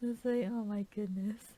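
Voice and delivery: ordinary talk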